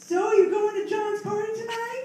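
put-on very high girlish voice. Acting out what a girl says to a guy, in a put-on girl voice. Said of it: "that's my girl voice".

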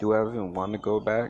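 usual speaking voice

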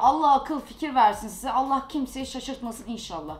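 ordinary delivery

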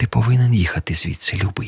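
barely there, soft, hushed half-whisper. Pat, looking in her mirror, speaks to the narrator; half-whispering. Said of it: "прошепотіла потім".

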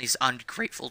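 voice cracking, breaking mid-word. Complaining about money spent on toys, voice cracking. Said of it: "that voice crack".

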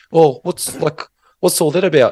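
put-on New Zealand accent. Speaker retelling what some lads asked about the border line, Kiwi accent. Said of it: "I'll do my Kiwi accent".

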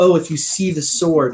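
ordinary delivery

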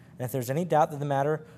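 plain

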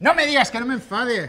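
sudden outburst of loud, high yelling. Told not to get angry after a late arrival, answering by yelling. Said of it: "pues no grites".

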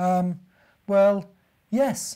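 sheepish, halting stammer. Narrator voices a bear showing a rabbit his straw bed: stammering, a little embarrassed. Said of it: "stammered the bear, just a little embarrassed".

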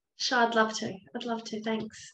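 terrible put-on English accent. Agreeing to go first in an intro, bad English accent. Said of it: "I was actually trying to do an English accent".

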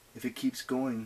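ordinary delivery

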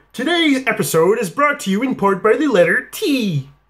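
cartoon felt frog puppet announcer voice. Doing voices in a row, introducing an episode: Kermit the Frog voice. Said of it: "Kermit the Frog here".

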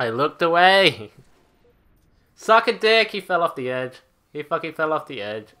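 loud, furious, angry outburst. Ranting after he looked away and his character fell off the edge, really pissed off. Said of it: "I'm actually really pissed off about that".

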